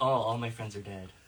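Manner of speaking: put-on depressed voice. Showing how the game character Isol talks when asked: depressed Isol voice. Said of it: "he's kind of depressed".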